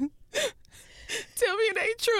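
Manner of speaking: weepy sobbing, very high, slow and drawn out. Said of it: "Are you crying?".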